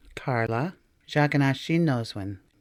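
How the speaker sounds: plain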